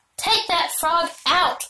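commanding tone. Speaking to a boy who has just climbed to the hayloft: ordering. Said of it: "ordered Fern".

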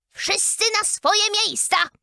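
ear-splitting, shrill, piercing loud shout. The queen, calling out to her guests: piercingly loud shout. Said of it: "Krzyknęła królowa przeraźliwie donośnym głosem".

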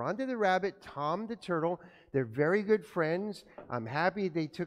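ordinary delivery

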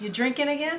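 playful teasing. Speaking directly to the person they are with, teasing. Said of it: "I'm teasing you".

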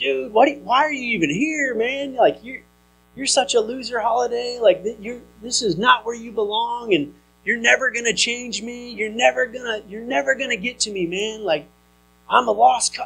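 mock drunken yelling. Recalling yelling at the man beside him while drunk, retelling a drunk yell. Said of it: "being drunk and intoxicated and essentially like yelling at Holiday".

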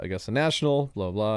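ordinary talk

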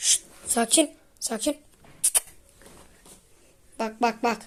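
frightened hush. Streamer playing with Osman as something attacks, frightened hushing. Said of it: "Korkmaya başladım Osman".

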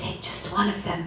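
barely above a whisper, soft and low. A woman who is not going to make it tells a fourteen-year-old boy, barely above a whisper. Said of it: "she said in a voice that was barely more than a whisper".

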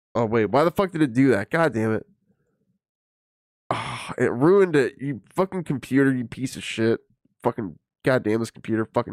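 exasperated, frustrated rant. Speaker imagining what the man in the video said during a pause, mock-frustrated rant. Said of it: "Got my frustration out".

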